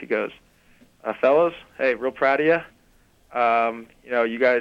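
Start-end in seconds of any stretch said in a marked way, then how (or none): 1.2-4.6 put-on unemotional, flat voice, faster pace. Retell someone's impression of a coach addressing his team: Coach Olsen impression, little emotion. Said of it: "you don't mind if I do the Coach Olsen impression?".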